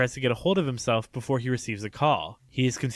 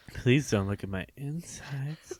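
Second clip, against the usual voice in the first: put-on coy, pleading tone, quieter; 5 dB quieter than usual. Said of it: "such a coy kinda".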